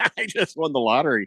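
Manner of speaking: ordinary talk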